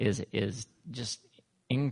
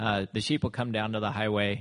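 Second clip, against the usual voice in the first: plain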